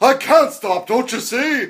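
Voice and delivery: very high, very loud, shrill, drawn-out voice. Retelling what was said to a kid who asked to stop: Doc Brown voice. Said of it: "the Doc Brown voice".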